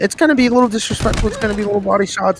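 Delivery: high, fast, hyped-up announcer call.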